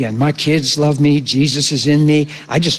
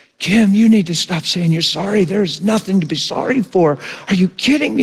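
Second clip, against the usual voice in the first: speaking while bawling, acted out; 5 semitones higher than usual. Retelling what he said to a woman who kept apologizing, re-enacting speaking while bawling. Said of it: "And I'm bawling".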